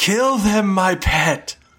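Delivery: very high, bellowing villain voice. A narrator voices the villain revealed as the mastermind, bellowing. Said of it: "He bellows out".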